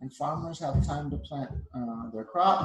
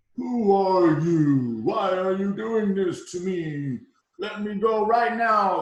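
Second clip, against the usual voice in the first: huge, booming, very loud, drawn-out cry; 4 semitones higher, 8 dB louder than usual. A storyteller voices the sun caught in Maui's lasso; big voice. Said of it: "I use a big voice because I think the sun's pretty big".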